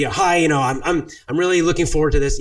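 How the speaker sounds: strong, confident energy. Showing listeners what confident energy sounds like, say it with confident energy. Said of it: "confident energy is".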